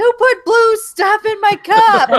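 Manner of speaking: very high, shrill, loud, drawn-out yell. Retelling yelling at the kids over the blue cup: imitating own yelling. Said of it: "yelling at the kids".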